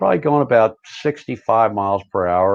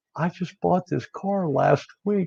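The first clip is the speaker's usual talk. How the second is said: mock, soft, high voice on the verge of crying; 8 semitones higher, 6 dB quieter than usual. Retelling a car accident, quoting the other driver, imitating a man near tears. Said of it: "He's almost in tears".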